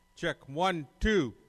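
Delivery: loud, projected voice. During a mic check, the speaker talks loud so levels can be set. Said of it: "Now I'm going to talk loud".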